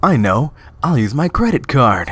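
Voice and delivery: trying hard at a put-on American accent. A streamer playing a game switches into their best american accent. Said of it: "time for my best American accent".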